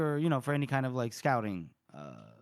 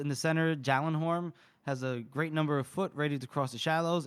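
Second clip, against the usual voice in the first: ordinary talk, nothing marked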